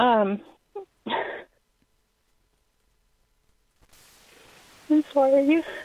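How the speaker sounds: upset and emotional. Asking for real guidance, the speaker apologizes as others tell them to breathe; upset and emotional. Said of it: "Take a deep breath".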